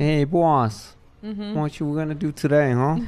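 New York Italian accent. Asked which accent Robert De Niro brings to mind, answering in a Robert De Niro New York Italian accent. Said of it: "The New York Italian".

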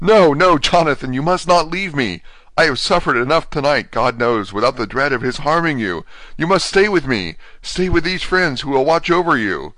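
frantic high cry. A wife seizing hold of her husband, crying out to him. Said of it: "she seized hold of him and cried out".

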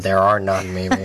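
sarcastic tone. Answering a question about downsides of a method, sarcastic tone. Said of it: "I did detect some sarcasm in there".

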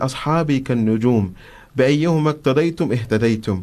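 plain

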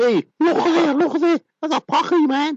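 very high Scouse accent, laid on thick. Talking about picking up dialects, the speaker puts on a liverpool accent. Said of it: "I'm talking like a Liverpoolian now".

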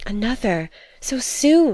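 exclaimed, full of delight. Handed a letter by mademoiselle, Edna exclaims, exclaiming with delight. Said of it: "she exclaimed, her eyes filled with delight".

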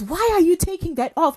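very high, very loud shrill yelling. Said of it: "And she's shouting".

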